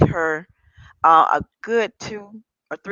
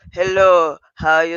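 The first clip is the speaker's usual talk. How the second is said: put-on Nigerian accent, much lower; 3 semitones lower, 3 dB louder than usual. Speaker quotes a man heard on a friend's speakerphone: Nigerian accent. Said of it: "clearly a Nigerian African accent".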